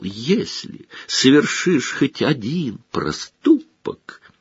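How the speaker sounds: squeaky, high, little taunting voice. Reading a story: a boy mimics his rival's mother's warning, squeaky mocking imitation. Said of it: "передразнивая, пропищал".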